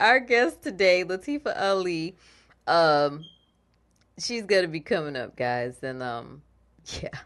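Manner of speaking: words broken up by giggles, laughing throughout. Introducing the upcoming guest after a funny exchange, laughing while talking. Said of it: "You got me laughing at that".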